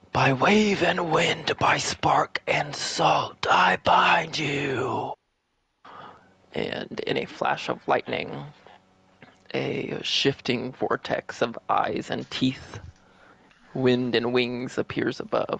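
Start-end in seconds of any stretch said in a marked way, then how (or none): 0.2-5.2 big echoing booming voice, slow incantation. Narrator voicing a voice echoing up from the pool: booming voice. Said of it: "Hear this booming voice".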